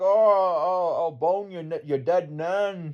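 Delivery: high, very slow Scottish drawl, "oh" stretched. Retelling a drunk man swearing while arrested in Edinburgh: imitating a Scottish accent. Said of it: "they have an accent".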